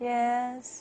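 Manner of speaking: flat, even, level pitch on yes. Intonation lesson, answering a question: level tone on yes. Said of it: "That's level".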